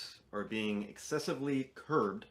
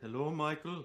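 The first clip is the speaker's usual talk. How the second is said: put-on German accent, pitched up; 5 semitones higher than usual. Imitating a German immigrant grandfather greeting someone: imitating grandfather's German accent. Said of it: "He still had his accent".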